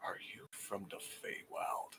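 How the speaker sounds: close, hushed, secretive whisper. A character leans close to a woman's ear to ask her something: whisper. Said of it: "so that he can whisper to her".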